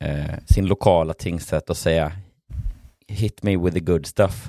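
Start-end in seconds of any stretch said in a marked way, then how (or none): none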